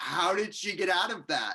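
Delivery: acted, high, loud, slow, drawn-out yell. Retelling watching a movie scene, imitating own yell at the screen. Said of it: "yelling at the screen".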